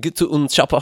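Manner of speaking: put-on German accent, pitched high. Doing the chopper line in an Arnold Schwarzenegger accent. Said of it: "just talk like Arnold Schwarzenegger".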